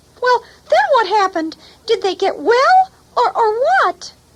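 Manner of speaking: very high, squeaky, curious worm puppet voice. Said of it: "this is my friend, Squeegee, the bookworm".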